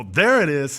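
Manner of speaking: loud, amazed tone of sudden discovery.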